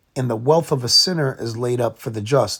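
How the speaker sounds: ordinary delivery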